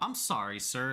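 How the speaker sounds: machine-like, automated robotic bot voice. Imitating a bot's rejection reply, in an automated robotic voice. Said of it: "In an automated voice".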